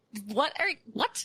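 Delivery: mock mild outraged half-yell, pitched high. Retelling watching a crying relative on a TV documentary, retelling screaming at the TV. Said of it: "I'm screaming at the television".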